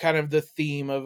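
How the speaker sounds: plain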